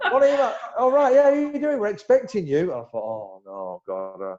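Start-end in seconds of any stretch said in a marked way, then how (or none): 0.1-2.7 put-on Essex accent, much higher, louder, faster. Retelling a phone call to the club, doing the man who answered in an Essex accent. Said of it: "Obviously in an Essex accent".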